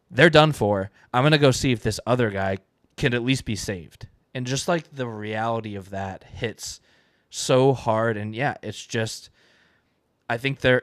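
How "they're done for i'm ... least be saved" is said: ordinary talk, nothing marked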